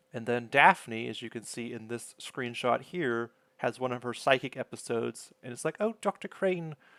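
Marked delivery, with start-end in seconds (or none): 5.8-6.8 clumsy, bad English accent, pitched higher. Recapping a Frasier episode, quoting a psychic episode in a bad Daphne impression. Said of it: "My English accent is terrible".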